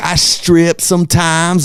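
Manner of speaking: put-on West Virginia accent. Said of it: "They all talk like this".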